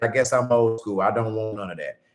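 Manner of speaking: usual speaking voice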